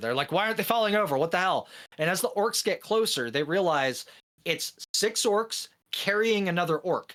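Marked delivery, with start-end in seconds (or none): 0.3-1.7 acted, flustered, fast, panicked speech. Telling a joke about soldiers whose enemies won't fall: imitating panicked soldiers. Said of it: "panicking 'cause these orcs aren't falling over".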